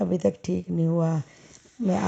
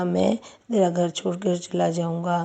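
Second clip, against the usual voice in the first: ordinary talk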